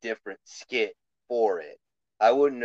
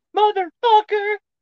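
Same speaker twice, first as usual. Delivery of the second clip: very high, shrill, loud, worked-up outburst; 7 dB louder than usual. Describing a podcast host getting hyped up: imitating Jim Cornette getting hyped up. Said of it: "he gets all hyped up".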